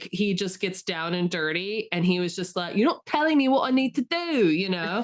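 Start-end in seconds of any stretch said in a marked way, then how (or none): 2.8-4.5 put-on raised, higher, frustrated full South London accent. Retelling an actor in Dracula makeup losing patience, doing Gary's mock-frustrated South London accent. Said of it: "he just like fully goes like street".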